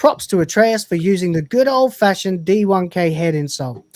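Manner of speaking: plain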